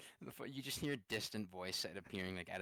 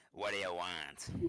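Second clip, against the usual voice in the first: loud, brusque, curt cigarette lady voice, no sweetness; 5 dB louder than usual. Voicing the cigarette lady who serves the players: cigarette lady voice. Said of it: "let me voice a cigarette lady sketch".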